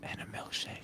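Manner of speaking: very soft, unvoiced whisper. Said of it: "you didn't hear me whisper it".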